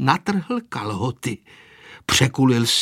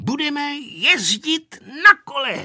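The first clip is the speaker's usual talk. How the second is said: very high, excited shouted cry; 13 semitones higher than usual. Asked by Anežka what he plans, Vojta answers and stops: shouted. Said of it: "vykřikl Vojta".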